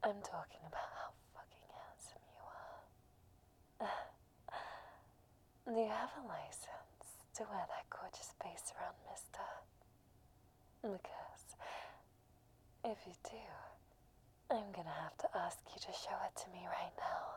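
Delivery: raspy seductive cougar voice. Performing a flirtatious line to a man, in a raspy seductive cougar voice. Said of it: "that really cougar vibe with the raspy voice".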